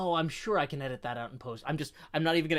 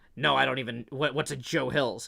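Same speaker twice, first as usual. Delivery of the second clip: sour, grumpy, creaky grumbling voice; 2 semitones lower, 3 dB louder than usual. Retelling the coworker's confused reply: imitating a grumpy coworker. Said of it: "the grumpy coworker's like".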